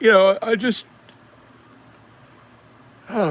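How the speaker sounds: very high, very loud, yawning mid-word. Answering a viewer's comment, the speaker yawns mid-sentence. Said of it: "I'm yawning away here".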